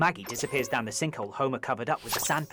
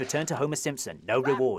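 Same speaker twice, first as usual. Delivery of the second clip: plain reading voice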